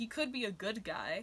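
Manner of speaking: normal talking voice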